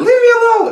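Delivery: very high, shrill, furious angry outburst. Acting out a daughter who slams her door: imitating an angry daughter. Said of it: "slams the door, be like".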